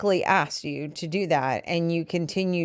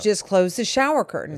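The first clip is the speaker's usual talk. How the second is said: dry, pointed, sarcastic tone with a cutting edge; 3 semitones higher than usual. Speaker retells what they told the listener, who kept doing it, mock-sarcastic retelling. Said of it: "got to the point where I was sarcastic".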